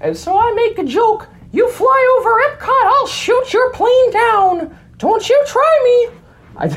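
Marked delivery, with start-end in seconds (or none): 1.5-6.7 squeaked out, high-pitched and loud. Telling a story, the speaker makes a joke in a Mickey Mouse voice. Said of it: "I do an all right Mickey voice".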